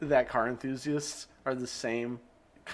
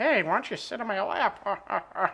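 put-on gross grandpa voice, high and drawn-out; 8 semitones higher, 4 dB louder than usual. Imitating an old man who tries to act like a grandpa: imitating a gross old man acting grandpa. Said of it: "tries to act like a grandpa and be like".

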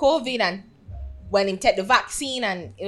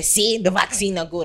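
plain

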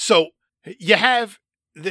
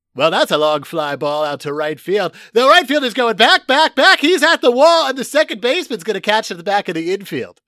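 radio play-by-play announcer style, pitched up; 5 semitones higher, 4 dB louder than usual. Retelling a Yankees radio call on a fly ball: John Sterling radio call. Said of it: "if you ever listen to John Sterling do a Yankees game".

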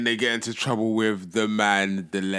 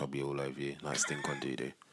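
very soft half-whisper, barely there; 8 semitones lower, 13 dB quieter than usual. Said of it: "He whispered it".

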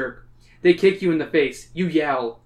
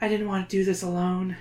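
soft, quiet, near half-whisper; 4 semitones higher, 5 dB quieter than usual. Reading a story aloud, a girl speaks to her pet: practically half-whispering. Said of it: "She is practically whispering".

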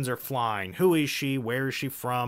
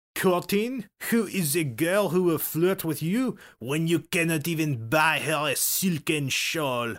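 put-on words spoken in a French accent; 4 semitones higher than usual. Quoting the innkeeper's reply while telling a story, Lupien French accent. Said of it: "I've never heard you do a French accent, but that was pretty good".

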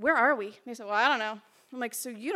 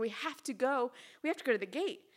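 put-on frantic, panicked, pressing, urgent insistence; 4 dB quieter than usual. Retelling urging others to go to the gate, imitating own past panic. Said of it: "I'm panicking".

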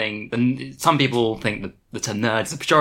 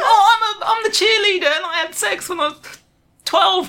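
very high, snide, sneering mock cheerleader voice; 5 dB louder than usual. Mocking normies who claim nerd identity: mocking a normie cheerleader. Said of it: "It's fucking like".

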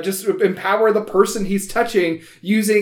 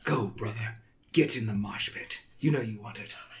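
very quiet, hushed, close-up whisper; 9 semitones lower, 14 dB quieter than usual. Voicing a character who pushes a player toward the mosh pit: whispering in someone's ear. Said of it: "he kind of whispers in your ear".

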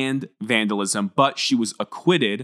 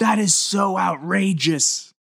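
mock very high-pitched, drawn-out screaming; 10 semitones higher than usual. Retelling how someone loudly interrupted a prosecutor: imitating someone screaming out. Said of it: "he just screams out".

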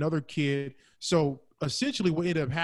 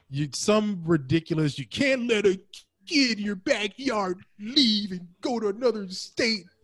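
put-on fan voice, much higher pitch; 6 semitones higher, 3 dB louder than usual. Mocking the other speaker's argument, he repeats it in a dumb Michigan fan voice. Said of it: "the dumb Michigan fan voice".

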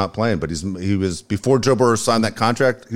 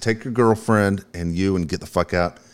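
normal talking voice

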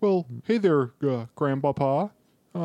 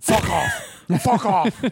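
gruff put-on Scottish voice, higher and louder; 4 semitones higher, 5 dB louder than usual. Imitating a McDonald's commercial: Brian Cox impression. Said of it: "the Brian Cox McDonald's commercials".

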